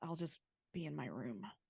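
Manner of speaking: muttering under her breath. A character slips away awkwardly, muttering under her breath. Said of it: "hear her under her breath say".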